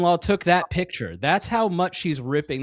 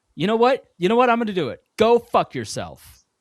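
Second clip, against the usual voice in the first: loud, raised, fake angry cussing; 7 semitones higher, 5 dB louder than usual. Taking a turn after being asked to cuss someone out: mock cussing someone out. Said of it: "go over there and cuss his ass the fuck out".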